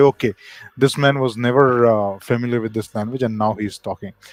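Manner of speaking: normal talking voice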